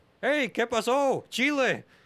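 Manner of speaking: high, slow, friendly voice in Spanish.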